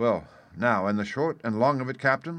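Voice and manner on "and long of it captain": plain reading voice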